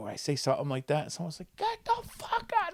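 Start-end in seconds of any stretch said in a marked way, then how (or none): 1.6-2.7 mock, very high, shrieked screaming. Retelling old people in the audience turning on him: imitating someone screaming. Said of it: "screaming at me".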